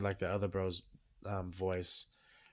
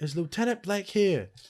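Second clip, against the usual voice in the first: imitated scream, higher and louder; 11 semitones higher, 9 dB louder than usual. Retelling a film scene where a soldier searches the tents: imitating someone screaming. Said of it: "he's screaming".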